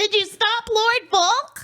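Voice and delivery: high-pitched yelling. Reading Lucy's line aloud in a fan fiction reading: yelling. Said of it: "I just figured 'cause I'm yelling".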